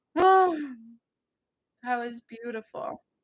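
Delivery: speaking through tears, tearful and crying. During a healing session, moved by what just happened: crying while talking. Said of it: "I'm crying right now".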